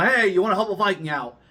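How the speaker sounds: big, bombastic, high-pitched showman call-out. Retelling how they called out to a young boy at the event: retelling own bombastic call. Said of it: "a little more bombastic".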